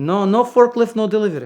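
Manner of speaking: put-on heavy Eastern European accent, loud. Retelling a man refusing to deliver the car, in a thick eastern european accent. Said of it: "really thick Eastern European accent".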